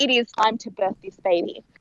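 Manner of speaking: ordinary talk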